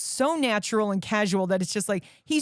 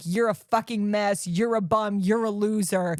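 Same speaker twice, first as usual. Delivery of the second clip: ordinary talk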